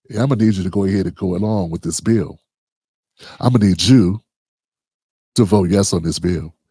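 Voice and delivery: hushed, real quiet, pressing, insistent persuasive tone. Retelling how Lyndon B Johnson pressed people close up: quiet Lyndon B Johnson impression. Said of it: "he would say it real quiet".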